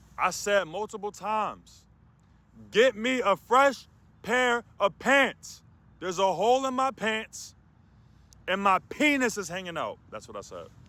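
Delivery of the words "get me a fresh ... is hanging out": put-on very high, shrill, loud shouting. Speaker retells banging on a cell and shouting demands: retelling shouting loudly. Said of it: "I'm talking loud".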